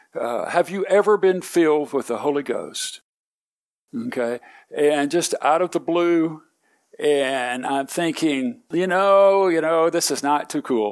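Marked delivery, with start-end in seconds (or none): none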